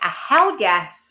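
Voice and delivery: loud, eager, can't-wait delivery. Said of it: "I'm like".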